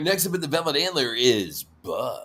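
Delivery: club MC announcer voice, DJ style. Offering to announce the next act at the Velvet Antler, in a DJ announcer voice. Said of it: "do like the D J voice".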